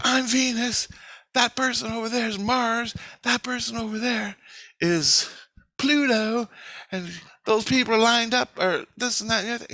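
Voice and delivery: high, drawn-out scream. Recounting what a woman screamed in a dream, retelling a scream. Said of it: "she screamed to me that".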